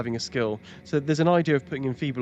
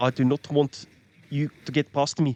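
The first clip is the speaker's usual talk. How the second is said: put-on hard-hitting, aggressive South African accent; 2 semitones higher than usual. Voicing the Rotten Druid, the opponent being fought, in an aggressive South African accent. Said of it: "my South African accent".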